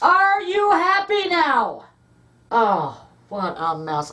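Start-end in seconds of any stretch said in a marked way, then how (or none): 0.0-1.9 sudden, high, swooping yelling outburst. Reacting to a mess someone made, yelling. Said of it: "I'm sorry for yelling".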